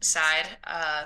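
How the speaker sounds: plain reading voice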